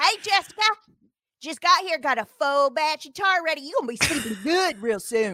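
put-on hillbilly accent. Playing a tar worker greeting jessica, in a hillbilly tar-worker voice. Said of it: "imitate the tar workers that you apparently think are hillbillies".

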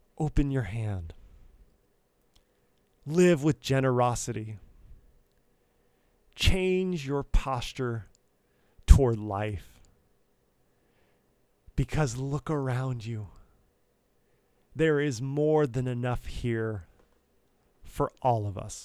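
kindly, gentle, low-voiced tone. A podcast speaker voices what he imagines he would say to us, in a put-on gentle tone. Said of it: "he would say to us in a gentle tone".

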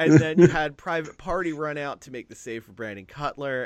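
ordinary talk

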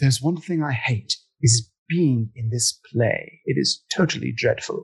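clumsy, poor, fake English accent. Redoing a line from a play after being asked for an accent, bad English accent. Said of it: "It wasn't a good accent".

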